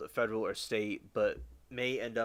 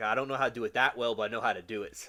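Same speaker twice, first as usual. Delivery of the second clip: dry sarcastic tone. Repeating an earlier remark about brain surgery: repeating own sarcastic remark. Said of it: "sarcasm in there where I'm like".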